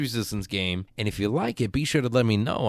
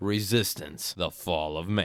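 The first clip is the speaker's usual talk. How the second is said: grand epic voice, lower and quieter; 6 semitones lower, 6 dB quieter than usual. Announcing the title of the game this episode covers: epic voice. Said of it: "And I use an epic voice".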